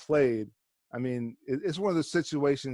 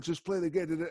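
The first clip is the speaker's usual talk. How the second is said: put-on scream, pitched higher; 4 semitones higher, 3 dB quieter than usual. Retelling a friend screaming over a phone speaker: imitating a friend screaming. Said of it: "the other guy screaming on".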